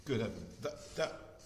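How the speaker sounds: stuttering, audibly shocked. Speaker reacting to a term people used about themselves, stuttering in shock. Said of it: "Sorry, I'm stuttering because that, that shocks me".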